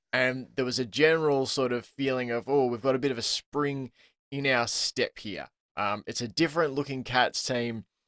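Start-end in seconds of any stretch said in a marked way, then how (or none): none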